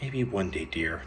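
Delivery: ordinary delivery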